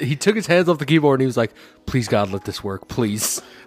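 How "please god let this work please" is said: mock prayerful tone, lower and slower. Retelling how a friend stopped at the keyboard and prayed; imitating someone praying. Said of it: "And then he prayed".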